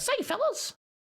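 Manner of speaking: very high pitch, never dipping low. Describing how a cartoon mouse always talks: Mickey Mouse voice. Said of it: "Mickey Mouse is kinda always like".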